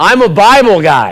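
very loud, very slow, proud, drawn-out yell. Retelling a dream of yelling up to heaven: proud yell, re-enacted. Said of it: "I say it just like that. Like real kind of proud".

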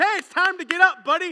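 very loud booming call. Imagining the voice that wakes Lazarus after four days: loud booming voice. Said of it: "a loud, booming voice".

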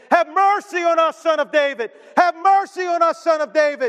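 high-pitched screaming, repeated crying out. Describing two blind men in a crowded street, acting out their screaming and crying out. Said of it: "screaming and crying out again and again".

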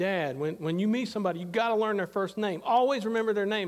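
ordinary delivery

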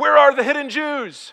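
very loud, high soldier's bellow. Telling a story, voicing the soldier demanding answers, bellowing. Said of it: "the soldier bellows".

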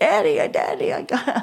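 imitated crying, pleading voice. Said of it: "I started crying".

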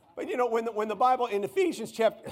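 breaking voice, cracking up high. Citing ephesians to listeners when the voice suddenly cracks, voice cracking. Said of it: "excuse me voice cracks puberty i'm sorry".

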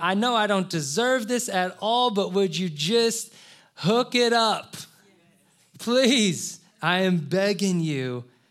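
loud pleading cry, begging tone. Retelling people begging Jesus for help: imitating someone crying out for mercy. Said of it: "they're crying out".

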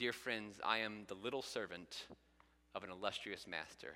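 quiet, soft-spoken delivery. Retelling how a speaker addressed a church, imitating someone speaking quietly. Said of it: "and then he quietly said".

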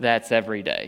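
dry, low, deadpan, totally unbothered. Retelling the reply to "Do you smell that?": imitating Alyssa's straight-faced reply. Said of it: "she looks at me straight-faced and says".

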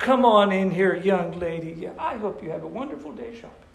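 put-on gallant, princely, overly courteous gentlemanly charm. Acting out a stranger's polite thanks at the door: imitating an overly polite reply. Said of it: "we're acting like princes".

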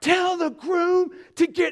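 piercing, shrill, very high-pitched yell. Retelling the church wedding coordinator's phone call, imitating a yell. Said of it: "she's yelling".

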